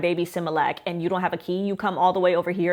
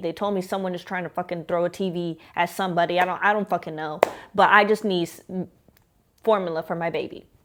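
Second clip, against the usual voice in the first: ordinary talk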